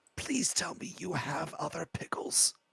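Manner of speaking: high, hushed whispered aside. Narrating a game, the speaker voices a character whispering to another: whispering. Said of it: "He kind of whispers to Olwen".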